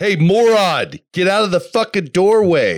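big, loud, booming, acted-out delivery. The speaker imitates how the listener's calm words come across, in a booming voice. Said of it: "But you have a booming voice".

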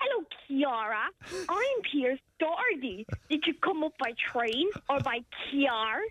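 put-on Irish accent attempt, Donegal. Trying out the accent being taught, asking Fran to judge: Pierce Doherty's Donegal accent. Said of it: "he's trying to teach me the accent".

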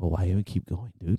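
soft, hushed half-whispering voice. Retelling what an inner voice said after a knee tweak: imitating a half-whispering inner voice. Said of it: "And it whispers".

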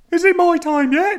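put-on loud, very high, small Birmingham child's voice. Telling a vampire story, voice the small child in a childish Birmingham voice. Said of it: "It's like a childish a Birmingham child".

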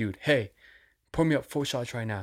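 pushy, blunt, demanding tone. Retelling a man ordering shots from the bartender: imitating a demanding order. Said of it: "He just fucking demanded".

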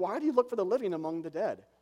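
play-acted, snarky, sarcastic angel voice. Quoting the angel at the tomb: imitating a snarky angel. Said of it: "It's the snarky angel who says".

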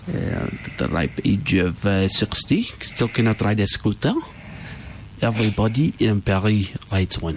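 put-on French accent.

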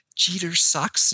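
high-pitched stage-whispered words. Retelling how a complaining woman said the offending words, imitating someone whispering. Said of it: "and she whispers it to me".

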